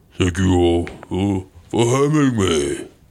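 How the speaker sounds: put-on accent of someone very big. Answering questions through the Magic Mike as Andre the Giant: Andre the Giant voice. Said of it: "this is Andre the Giant".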